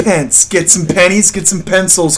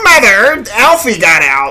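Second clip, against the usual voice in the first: put-on old man voice, swooping and drawn out; 4 semitones higher, 3 dB louder than usual. Retelling how an old neighbor calls for his mother, imitating an old neighbor's tone. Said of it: "and like that tone".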